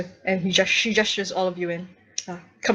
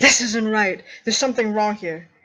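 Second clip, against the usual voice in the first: fast, irate, fault-finding angry voice; 3 semitones higher, 4 dB louder than usual. A game narrator voices a woman pointing at a document beside a nervous guardsman, angry. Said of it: "is pointing angrily".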